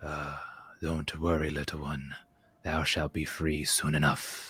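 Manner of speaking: soft, leaning-in, barely audible whisper. Playing a character leaning in to a caged animal: whisper. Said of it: "lean in and whisper".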